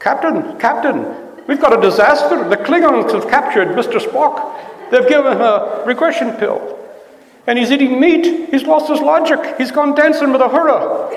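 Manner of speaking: put-on very high Scottish accent. Demonstrating the scottish accent heard on tv, in a tv scottish accent. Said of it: "So there's that accent as too".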